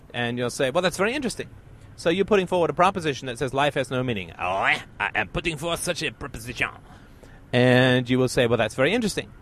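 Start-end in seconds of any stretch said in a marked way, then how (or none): 4.4-6.7 put-on French-accented delivery. Acting out a French speaker answering a question: French accent. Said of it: "as they will with a French accent".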